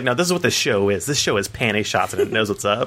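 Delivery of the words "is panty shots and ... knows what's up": ordinary talk, nothing marked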